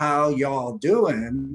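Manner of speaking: plain Texan accent. Explaining why to mirror and match the person you're talking to, texan accent. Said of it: "talking like you're from Texas and you're like".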